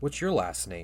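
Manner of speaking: ordinary talk, nothing marked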